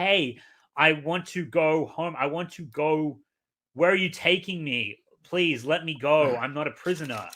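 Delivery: acted-out, mock pleading. Discussing a story character, acting out how she should be speaking, mock pleading. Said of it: "she should be pleading".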